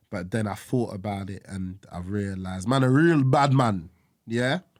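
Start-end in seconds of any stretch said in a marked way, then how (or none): 2.6-4.5 poor put-on Jamaican accent, pitched higher. Answering a teasing remark about himself: poor Jamaican accent. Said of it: "poor attempt at the accent".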